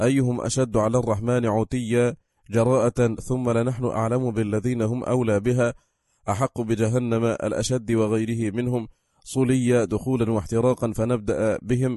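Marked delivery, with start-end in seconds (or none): none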